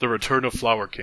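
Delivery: ordinary delivery, nothing marked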